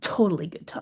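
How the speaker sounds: breathy, whispered sarcastic aside. Recommending watching kindergartners run amok at the zoo: sarcastic. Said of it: "I'm saying that sarcastically".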